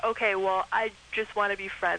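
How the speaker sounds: ordinary talk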